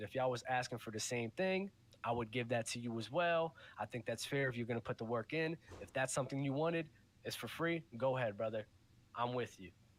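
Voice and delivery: ordinary talk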